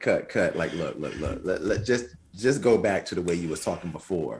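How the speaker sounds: ordinary talk, nothing marked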